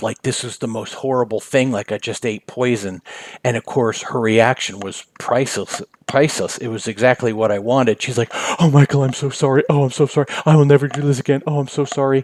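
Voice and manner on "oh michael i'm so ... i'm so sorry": mock effusive, doting, gushing, fawning apologetic voice. Retelling her reaction after being handed shaving cream: imitating someone fawning. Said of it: "fawning on, over me".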